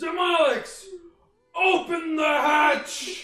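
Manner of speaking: very high, loud, drawn-out voice. Casting Minor Illusion to fake a captain's voice: Dutch's voice. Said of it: "but in Dutch's voice".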